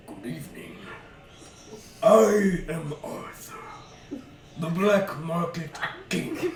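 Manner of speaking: polite, courteous creature voice. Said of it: "but up walks a massive creature. I have them all wrapped up. Oh boy. Huge horns on a massive head. Jackalope. Huge wings curling around him as this Holy fucking fuck. thing. Put it in front of the cam".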